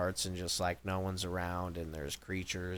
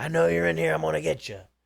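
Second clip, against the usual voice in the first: very high, very loud, rasping villain cry; 9 semitones higher, 10 dB louder than usual. Retelling how a horror game's bad guy bursts into the room: imitating a horror game bad guy. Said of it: "one of the bad guys would bust in the room, and they'd be all like".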